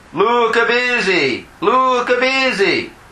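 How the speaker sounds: high fake Italian accent. Telling a joke, voicing the Pope's reply on the phone, Italian accent. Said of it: "with an Italian accent".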